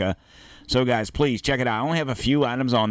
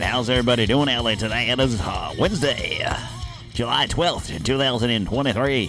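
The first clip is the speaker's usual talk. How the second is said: put-on vintage radio DJ voice. Opening the show, the host greets everybody in an old-timey DJ voice. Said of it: "That's my that's my old-timey DJ voice".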